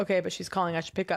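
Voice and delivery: ordinary talk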